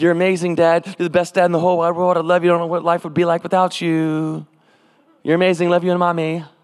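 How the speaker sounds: mock sweet-talking, gushing and flattering. Imitating a daughter asking her dad to take her shopping: imitating daughter sweet-talking. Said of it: "you butter 'em up?".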